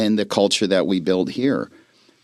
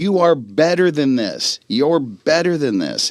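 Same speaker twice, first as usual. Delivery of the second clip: screamed, pitched higher; 5 semitones higher than usual. Retelling a coach screaming at a player across the field: imitating Dan Campbell screaming. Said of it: "he's screaming at him empowerment".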